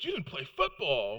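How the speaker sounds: mock appalled, outraged, scandalized, shocked disbelief. Retelling how a whole room answered his reply in unison: mock-scandalized disbelief. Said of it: "they said it in the same tone of voice as, "You don't love your mama."".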